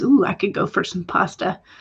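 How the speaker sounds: normal talking voice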